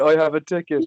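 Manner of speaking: light, mild put-on wrestler-style scream. Retelling a wrestler's brawl with a ticket: imitating Jericho screaming. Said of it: "he was just screaming".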